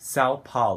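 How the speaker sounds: São Paulo said with an American accent. Showing how an American would say a Portuguese place name: American accent. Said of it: "um americano, por exemplo, vai falar São Paulo".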